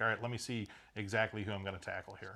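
ordinary delivery

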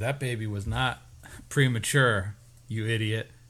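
ordinary talk

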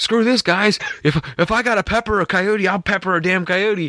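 acted very high, frightened, scared outburst. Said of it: "he's over there shaking".

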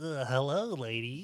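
goofy, dorky, nerdy little-guy voice. Describing an alternate character idea, voicing a goofy nerdy guy. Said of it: "a goofy kinda nerdy guy who was, like, really small".

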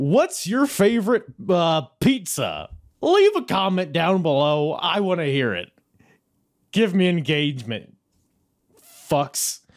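loud, hollered yelling. Speaker asks viewers to leave a comment like YouTubers do, yelling at viewers. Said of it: "why I'm yelling at you".

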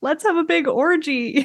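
high voice on the edge of cracking. Speaker retelling what one of the golfing guys said: imitating a voice almost cracking. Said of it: "his voice is almost cracking".

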